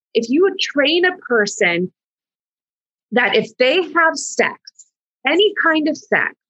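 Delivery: rising anger. Criticizing purity culture to another speaker, getting angry. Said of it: "I'm getting angry now".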